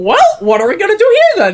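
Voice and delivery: very high, loud and bouncy delivery. Told to sound like Mickey Mouse, the speaker repeats the question in Mickey Mouse voice. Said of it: "Sound like Mickey Mouse".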